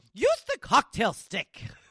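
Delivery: high, shrill fake British accent, yelling. Retelling how his girlfriend suddenly copies the yelling, put-on British accent, mock-yelling. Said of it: "develops a British accent and yells at it".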